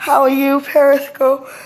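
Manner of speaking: yawning while talking. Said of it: "I'm sorry to be yawning".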